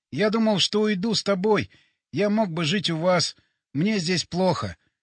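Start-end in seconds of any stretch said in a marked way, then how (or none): none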